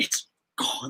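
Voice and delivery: whispered villain voice. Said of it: "he whispers it".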